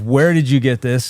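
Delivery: ordinary talk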